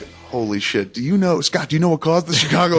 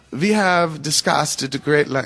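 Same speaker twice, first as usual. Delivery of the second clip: clumsy, bad, fake German accent. In a skit with Goebbels and Hitler discussing global domination, use a bad German accent. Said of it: "is that a German accent?".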